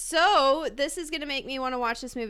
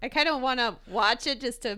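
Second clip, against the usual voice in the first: plain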